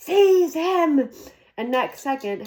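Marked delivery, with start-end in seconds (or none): 0.0-1.1 high, loud, shrieked scream. Reading a story aloud, voicing a character's order, screaming. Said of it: "Voldemort screamed".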